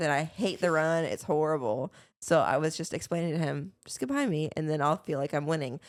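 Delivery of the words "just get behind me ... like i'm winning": normal talking voice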